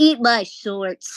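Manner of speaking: put-on cartoon kid voice, bratty tone. Put on the spot to do her Bart Simpson, Bart Simpson voice. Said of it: "do your do your Bart Simpson".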